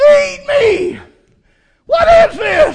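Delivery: very high, shrill, loud wailing cry. Speaker acts out the flesh going into shock, crying out and wailing. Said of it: "the flesh starts crying".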